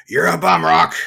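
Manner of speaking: put-on gruff boxing trainer voice. Imitating a boxing trainer character from a film series: Mickey voice from Rocky. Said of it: "I want Mickey from the Rocky series".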